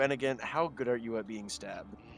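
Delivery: low, quiet, discreet aside. A player's character turns to Ben to ask him something: speaking quietly. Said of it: "and I quietly say".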